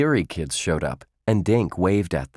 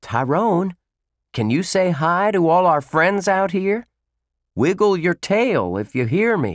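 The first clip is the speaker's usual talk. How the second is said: raised, higher, louder voice, speaking up; 10 semitones higher, 3 dB louder than usual. Judd, before an audience of kids, calls to the silent Tyrone; louder voice. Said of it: "in a louder voice".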